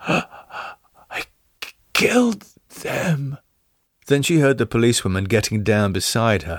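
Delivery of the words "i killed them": feeble, faint, barely-there weakened whisper. A woman begs a policewoman to hear her out, feeble, barely a whisper. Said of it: "continued in a more enfeebled voice, barely a whisper".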